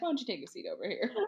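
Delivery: low voice, almost a whisper. Showing what Chris Hansen says, a Chris Hansen impression. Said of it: "That's what he says".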